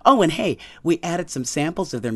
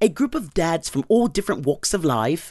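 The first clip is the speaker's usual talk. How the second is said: slight, badly done, put-on English accent. Introducing a dads' dance group and how they met, bad english accent. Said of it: "I'll do a little English accent".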